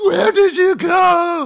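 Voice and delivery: drawn-out, very loud, very high guttural roar. Describing how a character screams in an episode: imitating Big Mom's guttural roar. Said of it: "this guttural roar".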